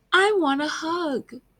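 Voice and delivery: sorrowful little voice. Reading a story aloud to a group, speaking Pen's line in a sad voice. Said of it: "Get your best sad voices out".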